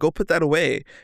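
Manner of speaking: put-on aggressive, abrasive, rude tone. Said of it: "aggressive and".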